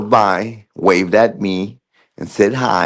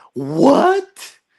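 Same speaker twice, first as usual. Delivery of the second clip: mock confused tone, pitched higher. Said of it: "everybody's like".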